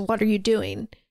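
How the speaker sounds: mock mad, confrontational, angry tone. Retelling a movie scene where Lucas walks in: imitating an angry question. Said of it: "is clearly mad about it".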